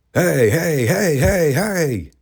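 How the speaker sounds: high mock yell. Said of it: "he would scream to the top of his lungs".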